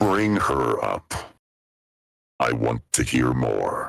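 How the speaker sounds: very low, machine-deep voice-changer voice. Voicing the character Nibblethorn through a voice changer, Nibblethorn voice like Optimus Prime. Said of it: "Why is he so like Optimus Prime".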